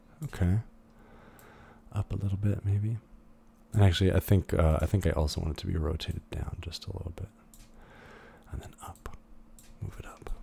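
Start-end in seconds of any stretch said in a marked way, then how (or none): 4.8-10.3 very quiet, breathy, hushed whisper. Speaker adjusting an object with the move tool, whispering. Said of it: "now I'm whispering".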